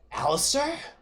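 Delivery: very high, angry and excited woman's cry. Voicing a woman calling out to alistair: angry and excited woman's voice. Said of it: "a curious mix of angry and excited".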